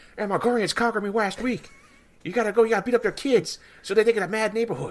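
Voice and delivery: shrill, very high animated-show character voice. Showing the impression that cracks up coworkers who are fans: South Park character impression. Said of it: "It's like".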